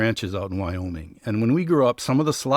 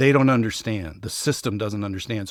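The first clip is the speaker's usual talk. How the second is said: ordinary delivery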